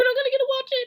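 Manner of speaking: very high, loud, frantic panicked squawk. Retelling waiting for the stream when YouTube failed, imitating Shelby panicking. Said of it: "that's what he sounds like when he's panicked".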